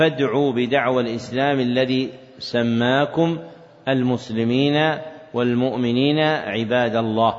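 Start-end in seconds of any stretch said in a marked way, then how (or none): none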